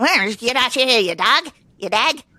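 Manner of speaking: put-on Irish brogue. Recalling a movie where Brad Pitt played an Irish guy: Brad Pitt Irish accent impression. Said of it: "he played, like, that Irish guy".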